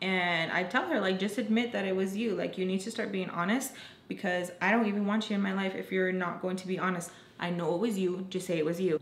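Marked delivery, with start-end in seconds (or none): none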